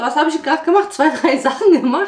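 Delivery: winded, breathless, puffing speech, short of air. Talking to viewers after doing a few things: out of breath. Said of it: "Ich bin auch schon direkt schon aus der Puste".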